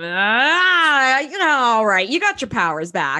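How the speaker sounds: mock fed-up, put-upon, slow and annoyed, long "ah". Imitating q throwing up his hands: annoyed q voice. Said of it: "so annoyed".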